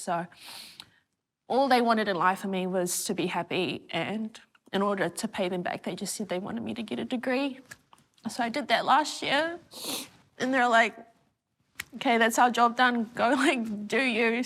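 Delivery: weepy, teary speech, crying through the words. Interviewee opens up early in the conversation, crying. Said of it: "I'm already crying".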